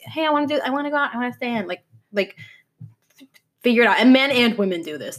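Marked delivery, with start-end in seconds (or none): 0.0-1.7 put-on dumb girl voice, higher and faster. Describing someone whose attitude changes on a dime, act out their mixed messages in a dumb girl voice. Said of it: "despite my dumb girl voice".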